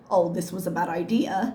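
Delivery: ordinary delivery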